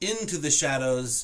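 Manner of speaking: ordinary delivery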